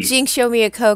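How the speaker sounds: normal talking voice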